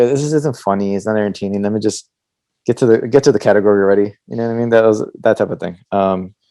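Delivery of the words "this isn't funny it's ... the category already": normal talking voice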